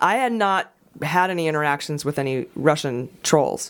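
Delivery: ordinary talk, nothing marked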